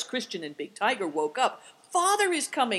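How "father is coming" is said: very high, glad, joyful cry. Woken by barking, she cries out to the others, crying out joyfully. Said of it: "cried Seven Stars joyfully".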